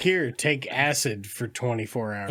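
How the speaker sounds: usual speaking voice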